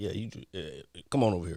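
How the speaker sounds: voice dropped into a low, deep register. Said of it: "he said he used his deep voice".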